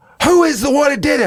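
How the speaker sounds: very high, shrill, furious scream. Retelling a man screaming at everyone cleaning up, imitating someone screaming. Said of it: "he's screaming".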